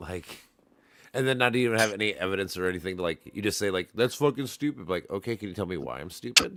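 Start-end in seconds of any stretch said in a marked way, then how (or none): 3.9-4.9 put-on scream, higher and louder. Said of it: "to literally scream your face off like that?".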